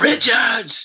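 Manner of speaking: projected stage whisper, pushed hard. Retelling a movie scene where a character calls out while hiding: Amber yell whisper. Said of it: "like, yell whisper".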